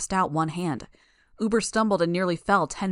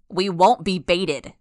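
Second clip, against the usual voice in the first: raised voice, slow, each word drawn out; 5 dB louder than usual. Narrator reads a man answering a woman during an argument; raised voice. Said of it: "Leet raised his voice".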